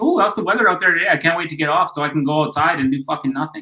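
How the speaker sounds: put-on Canadian accent. Imitating small talk with till workers in a canadian accent. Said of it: "waiting the last fucking forty-two minutes for the Canadian accent to come out".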